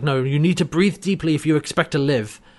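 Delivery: normal talking voice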